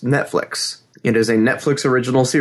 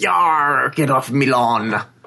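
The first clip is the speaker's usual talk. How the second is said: put-on slow old pirate man voice. Picturing the other speaker as a pirate old man: pirate old man voice. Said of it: "a pirate old man".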